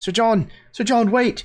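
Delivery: put-on very high young boy shouting, calling out. Voicing a young boy shouting after a knight: young boy shouting. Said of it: "the voice of a young boy, kind of shouting after you".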